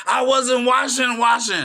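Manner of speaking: very loud, shrill scream at the top of the lungs. Retelling a heated argument, imitating own screaming at top of lungs. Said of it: "screaming at my, at the top of my lungs".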